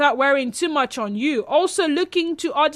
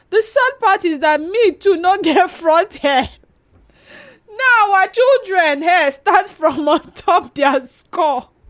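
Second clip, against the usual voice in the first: words broken up by laughter while talking; 3 semitones higher, 4 dB louder than usual. Telling a story to listeners and apologizing for laughing, speak laughing while talking. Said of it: "Sorry, I'm laughing".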